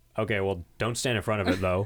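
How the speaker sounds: low, mumbled, indistinct speech. Retelling Jeffrey's words to a woman standing in front of the lawnmower, mumbling. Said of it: "he mumbles".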